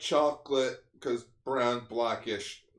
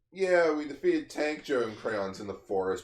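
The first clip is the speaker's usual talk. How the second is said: plain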